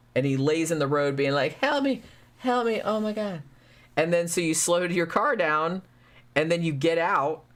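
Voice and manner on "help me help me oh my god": put-on high, pleading, wounded baby-goat cries. Describing a goat-like monster that lies in the road to lure drivers: pretending to be a wounded baby goat. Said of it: "pretends to be like a wounded baby goat".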